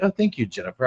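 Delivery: mock proper, very formal, courteous tone. Retelling own earlier thanks to a viewer: imitating own formal tone. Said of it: "I was very formal about that".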